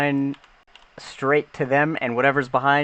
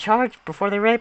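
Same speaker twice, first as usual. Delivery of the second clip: frantic, panicked, high, squeaky voice; 7 semitones higher than usual. Voicing Rear issuing frantic orders to charge: frantic high-pitched squeaky voice. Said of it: "in a very high-pitched, squeaky voice".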